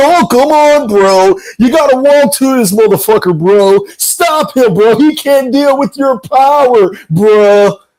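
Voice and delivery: put-on drunken, slurred speech. Imitating Teofimo Senior urging on Junior: put-on drunk slurring. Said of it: "slurring his words".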